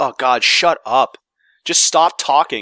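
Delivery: mock exasperation. Speaker acts out a player's reaction to voice acting in games, mock-exasperated. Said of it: "Now you're just like".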